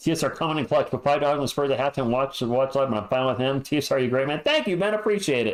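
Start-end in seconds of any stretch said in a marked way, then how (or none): 0.0-4.4 very fast, rushed, rattled-off reading. A tired speaker reads a list aloud, very fast reading. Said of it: "Sorry if I read that so fast".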